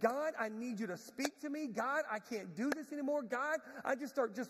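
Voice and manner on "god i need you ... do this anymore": acted, pleading, yelled delivery. Retelling getting on their knees to pray, re-enacting begging god. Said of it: "I'm begging God. I'm yelling at God".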